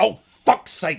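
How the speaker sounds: very loud, very high, shrill swearing blurt. Retelling a card failing to tap in a very quiet place, retelling a very loud outburst. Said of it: "Very loudly".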